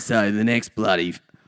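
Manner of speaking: fake, put-on Australian accent. Pretending to be the other person, put-on Australian accent. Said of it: "I just did an Australian accent pretending to be you".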